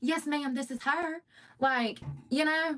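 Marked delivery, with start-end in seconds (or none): 0.0-1.2 polite, courteous, professional phone voice. Showing the voice used on professional phone calls: professional phone voice. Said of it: "I got a whole nother voice".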